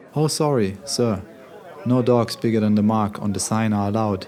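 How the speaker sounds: usual speaking voice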